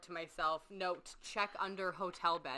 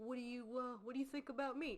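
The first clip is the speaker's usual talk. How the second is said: mock-dramatic put-on voice, higher and quieter; 5 semitones higher, 6 dB quieter than usual. Retelling what Richard asked the psychiatrist, imitating Richard being dramatic. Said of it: "and he's all dramatic".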